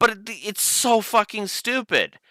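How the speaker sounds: very high, high-pitched, mad, angry ranting. Ranting about a franchise's story, then apologizing for getting mad, mad ranting. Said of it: "Sorry for getting so mad at this".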